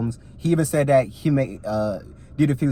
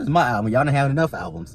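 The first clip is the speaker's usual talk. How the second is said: ordinary talk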